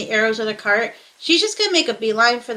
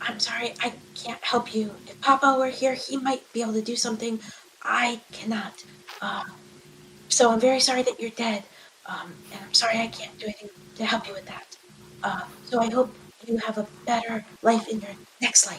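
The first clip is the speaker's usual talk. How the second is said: whispering in character voice, quieter; 7 dB quieter than usual. Voicing a character who leans in to a dead horse: whispering in character. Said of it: "she's just gonna lean in and whisper".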